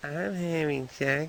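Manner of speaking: put-on high, girlish little girl voice. Retelling what a woman said, the speaker goes into a little girl voice. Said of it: "she went into the little girl voice".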